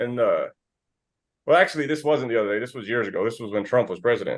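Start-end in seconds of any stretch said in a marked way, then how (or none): none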